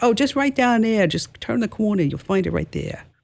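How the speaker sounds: put-on New York woman's accent. Retelling a woman's answer to her question, in a New York accent. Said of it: "she had a New York accent".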